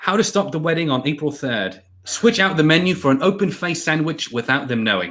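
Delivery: best put-on British accent. Reading a comment aloud after being asked for a British accent: Harry Potter British accent. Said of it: "Do the Harry Potter".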